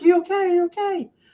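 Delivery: shrill, very high shouting. Retelling running up the stairs after a loud noise: imitating a yell. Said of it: "we're yelling".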